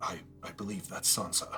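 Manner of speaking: hushed, whispered, very quiet almost-whisper. Voicing a character telling a companion who a hooded figure is: whispering. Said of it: "whispers to you and says".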